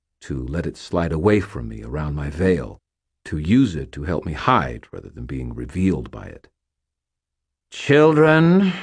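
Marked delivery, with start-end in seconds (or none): 7.7-8.7 high, loud, scornful, contemptuous voice. She addresses the children, her tone full of contempt. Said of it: "her tone full of contempt".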